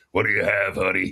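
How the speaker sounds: hoarse, husky voice. Joking about a husky throat this morning, in a husky speakeasy cocktail waitress voice. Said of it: "I probably sound like a speakeasy cocktail waitress".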